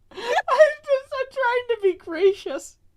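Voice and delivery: slow, laughing, giggling through the words. Insisting to the others about being gracious: laughing while talking. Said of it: "I can't stop laughing".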